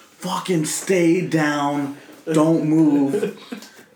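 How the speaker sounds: high, very slow, stretched-out yell. Recounting what happened in the living room, retelling a yell. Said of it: "I'm just like yelling at them".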